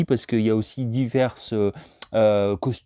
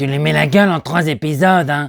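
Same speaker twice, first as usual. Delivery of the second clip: high, loud, cartoony, slightly duck-like French dub voice; 5 semitones higher, 8 dB louder than usual. Showing the voice of a character he likes to imitate: Polly's French dub voice. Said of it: "un personnage que j'aime bien imiter".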